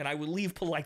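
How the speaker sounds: ordinary delivery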